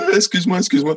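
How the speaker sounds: very high-pitched, penitent, pleading tone. Speaker retells apologizing to him after the concert, acting out a penitent apology. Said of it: "genre en mode pénitence, à genoux".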